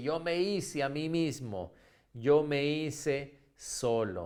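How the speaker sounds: ordinary delivery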